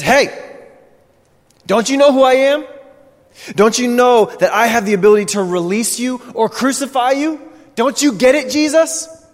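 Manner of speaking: acted, high, angry eruption. Retelling how a governor finally erupts at a silent prisoner: imitating Pilate erupting in anger. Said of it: "and he erupts, and he just says".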